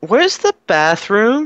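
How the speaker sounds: play-acted very high, dopey, confused drunken bewilderment. Retelling approaching strangers while faking it: pretending to be drunk and confused. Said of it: "pretending to be drunk and a little bit stupid".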